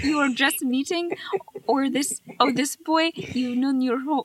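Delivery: put-on Russian accent. Acting out a character's line to Lisi, put-on Russian accent. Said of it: "I'm just doing a Russian accent".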